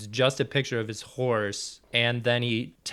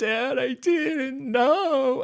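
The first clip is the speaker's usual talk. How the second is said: mock pitiful, very high, very slow, drawn out; 14 semitones higher, 4 dB louder than usual. Retelling a movie scene where a son answers his father: imitating someone being pathetic. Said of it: "he's being real pathetic".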